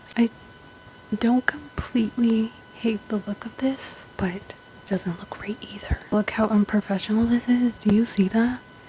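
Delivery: hushed whisper. Showing bleached roots on camera while everyone else is awake, whispering. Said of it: "I'm whispering".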